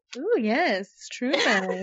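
put-on sultry, very slow, lingering, drawn-out "ooh". Re-enacting own earlier reaction to a true crime episode: imitating a sultry ooh. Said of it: "why you're doing a sultry ooh".

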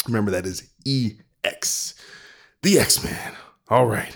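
almost out of breath. Finishing a sponsor plea with an email address, almost out of breath. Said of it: "almost out of breath here".

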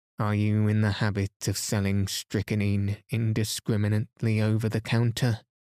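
plain reading voice

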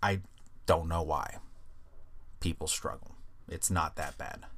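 halting, low, creaky fried voice. Talking about an exam topic, then noticing own voice: vocal fry. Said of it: "Am I developing vocal fry?".

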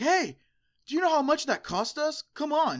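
frantic screaming, loud and high, swooping wildly. Retelling yelling at players kicking the keeper, at a bar: retelling own screaming. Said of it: "And I started screaming, and I'm like".

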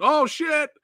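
high, loud, starstruck excited yelling.

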